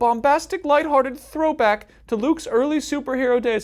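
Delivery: very high, silly, funny put-on voice. Reading a review blurb from the back cover in a put-on funny voice. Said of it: "I just did a funny voice".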